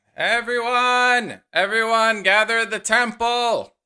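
loud, high-pitched town-crier calling shout. Voicing a town crier heard from outside: town crier shouting. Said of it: "the voice of some kind of town crier, uh, shouting".

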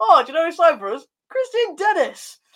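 put-on excited voice.

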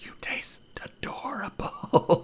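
soft, hushed, breathy whisper. Voicing Polly speaking to the roasting head: whispering. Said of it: "Polly whispers".

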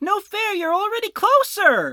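very loud, shrill, high swooping shout. Voicing a character who joins in, calling out: shouting. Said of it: "he shouts out".

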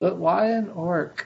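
secretive, covert stage aside. Asking Jack a question so Glugtar won't hear, said quietly. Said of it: "I kind of say that quietly".

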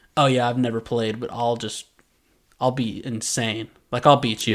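normal talking voice

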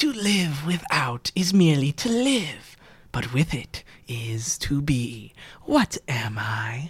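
slow, lazy, sing-song, teasing demon voice. Narrating a game, the speaker voices a demon finishing its riddle as two players leave, taunting demon voice. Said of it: "The demon is lounging on the operating table. It has an elf's hand that it's chewing on lazily. / Is it lion size? / It's just doing this mainly to annoy you. / and he says".

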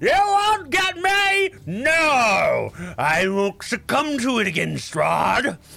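put-on cackling, wily old wizard, very slow, high, swooping. A game master voices a wizard flying over the players, in a wily old wizard voice. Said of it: "and they're this old, wily-looking wizard. ... but you hear this cackling, this... it's not the same voice, but it's definitely coming from a male voice you can discern".

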